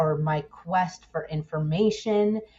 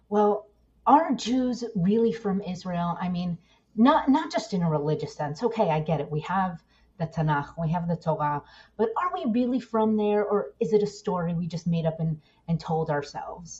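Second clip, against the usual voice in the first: normal talking voice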